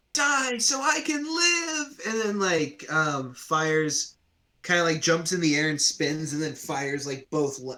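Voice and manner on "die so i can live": put-on very high, slow, sobbing little kid voice. Voicing a little kid in the game scene who cries out, crying little kid voice. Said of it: "the little kid, while crying, goes like".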